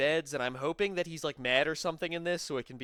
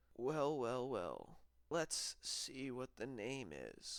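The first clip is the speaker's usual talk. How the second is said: weird, villainous, very hushed sinister half-whisper; 3 semitones lower, 12 dB quieter than usual. Speaker mocks a man who affects voices, doing his weird sinister half-whisper. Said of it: "he has to do this like weird whisper where he's like".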